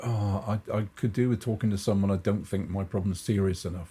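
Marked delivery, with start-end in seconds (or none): none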